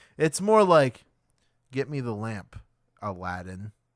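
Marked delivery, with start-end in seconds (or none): 1.7-3.7 mock dull, bland, low, unthreatening delivery. Mocking an unthreatening villain line: imitating Jafar's bland delivery. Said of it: "it is a bland look of Jafar".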